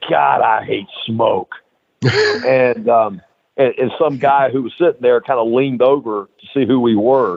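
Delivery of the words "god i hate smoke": rough, creaky, grating, rasping voice. Retelling what Hawk said when smoke came over your booth, imitating that voice of Hawk's. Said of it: "with that voice of his".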